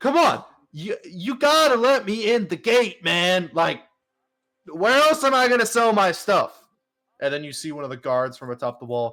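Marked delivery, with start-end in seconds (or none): 0.0-6.5 shrill yelling at full volume, very high-pitched. Storyteller voicing a man at the gate begging to be let in, yelling. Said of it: "and he's yelling".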